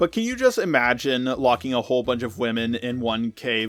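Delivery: ordinary talk, nothing marked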